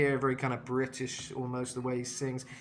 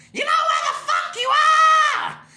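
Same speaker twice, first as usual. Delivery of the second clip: very loud, very high, fry-distorted grated shriek; 14 dB louder than usual. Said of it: "It's kind of like very grated".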